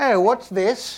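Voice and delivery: terrible put-on British accent. Voicing a passing lady who stops, in a terrible british accent. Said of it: "That's my terrible British accent".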